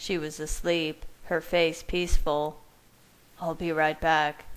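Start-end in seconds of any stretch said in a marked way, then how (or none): 3.4-4.5 speaking in a murmur. Heading out to the garage, the narrator speaks to a companion, murmuring. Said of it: "I murmured to Rosalie".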